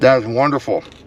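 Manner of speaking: speaking with mouth full of food. Eating a burger on camera for viewers, talking with mouth full. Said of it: "Don't talk with your mouth full".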